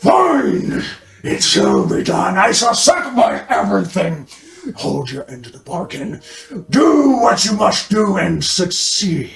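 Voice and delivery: slow, drawn-out, swooping monster voice. Voicing a second monster answering a bargain: monster voice. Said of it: "And the other monster voice".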